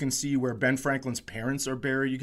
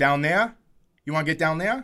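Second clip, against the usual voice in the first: fake, badly done Boston accent; 2 semitones higher, 5 dB louder than usual. Retelling what a construction worker asked him, in a bad boston accent. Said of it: "a bad Boston accent".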